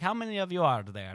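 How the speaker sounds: put-on high-pitched German accent. Retelling a worker lining visitors up at an asylum attraction, in a german accent. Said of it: "she had like a German accent".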